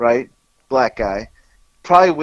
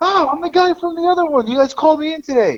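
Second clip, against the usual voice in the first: mock friendly hollering, very high and loud. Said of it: "So he's yelling really loud".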